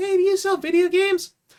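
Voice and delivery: put-on very high little boy's voice. Recalling calls he made at six, speaker quotes himself in a little boy's voice. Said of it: "this little boy's voice saying".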